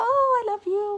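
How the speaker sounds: put-on cooing baby talk, very high, loud, sweet. Speaker shows how to talk to a cuddly little creature in bed, sweet baby voice. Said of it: "talk to in that sweet baby voice".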